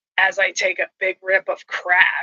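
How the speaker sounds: put-on muttering under breath. Retelling what a guy muttered while lighting up: imitating muttering under his breath. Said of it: "under his breath".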